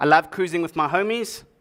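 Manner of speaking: ordinary talk, nothing marked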